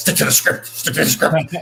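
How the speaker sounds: hushed stage whisper. Retelling what someone whispered while walking by at the event: imitating a whisper. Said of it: "And she whispers".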